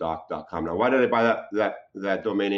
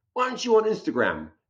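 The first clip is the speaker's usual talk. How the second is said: put-on very high, way-up-high British accent; 13 semitones higher than usual. A doctor retells what a fighter patient said to him, imitating a British accent. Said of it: "with his British accent".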